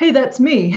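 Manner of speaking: totally nonchalant. Retelling how grandpa spotted himself in a museum photo: imitating a totally nonchalant remark. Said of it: "this kind of totally nonchalant way of his".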